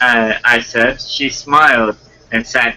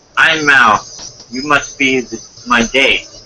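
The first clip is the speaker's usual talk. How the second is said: ordinary delivery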